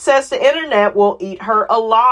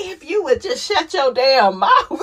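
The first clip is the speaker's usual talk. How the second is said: dismissive, disparaging tone in a high voice; 6 semitones higher than usual. Retelling what an aunt said to Carmen: imitating Candy's aunt. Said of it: "what did she say to Carmen?".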